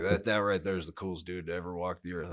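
ordinary talk

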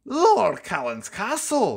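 proud, sing-song announcing voice. Narrator reading Donald answering Percy's question, proudly announcing. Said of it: "Donald proudly announced".

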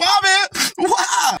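very high, tearful sobbing through tears. In a dramatic scene, a character is told to quit crying: crying. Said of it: "Quit crying".

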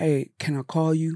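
apologetic, masculine-sounding, manly voice. The speaker shows how to ask to call someone, in an apologetic, manly voice. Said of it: "use it in the apologetic, manly voice".

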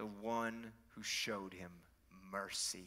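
slow words forced through clenched teeth. Retelling a religious leader's reply, mock speaking through clenched teeth. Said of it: "Through clenched teeth".

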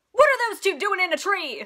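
loud indignant yell.

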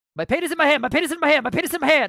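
quick-fire, run-together, rapidly rattled-off repeated words. Reading a tipper's question aloud and trying the phrase: saying it really fast. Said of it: "when you say it really fast".

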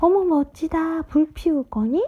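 high, delighted cry, cheering out. Reading a character cheering as firewood is laid out, crying out with delight. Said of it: "아니카가 환성을 질렀다".

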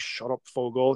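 half-swallowed, muttered, mumbled words. Retelling a movie scene about a towed car: imitating someone mumbling. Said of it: "And he's just mumbling".

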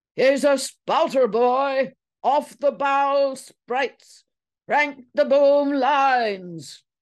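very loud, rowdy, boisterous sailor bellow. Narrator reads Lizzie demonstrating to the staring men: loud, boisterous outburst. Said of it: "demonstrated in a loud and boisterous outspurt".

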